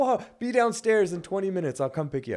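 shrill, very loud, high-pitched screaming. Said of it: "screaming at me".

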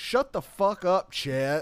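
rude, very slow put-down. Acting out being a rude next-door neighbor: acting mean as a neighbor. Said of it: "I'm just, like, mean to [name]".

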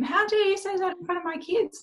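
play-acted piercing, very high-pitched banshee shriek. Recounting a hospital scene, acting out yelling like a banshee at a doctor. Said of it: "I was yelling like a banshee at this doctor".

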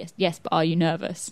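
ordinary delivery

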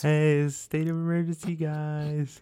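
high, slow voice, "guys" drawn out long. Acting out a made-up president's emergency line: Aziz Ansari voice. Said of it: "You gotta do the Aziz Ansari voice".

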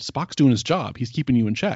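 ordinary talk, nothing marked

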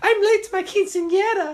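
put-on very high, obnoxious girl voice. Imagining a character in a sequel: obnoxious stereotypical mexican girl voice. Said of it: "this obnoxious little girl, like, stereotypical Mexican girl".

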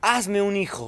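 high, full-throated, all-out scream at top of lungs. Retelling how a woman lunged at the speaker after a photo, retelling her shout. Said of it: "y grita a todo vientos".

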